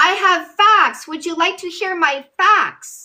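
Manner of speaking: angry, really mad, heated, combative voice. Offering again to share facts in an argument: sounding really mad. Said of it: "You sound really mad".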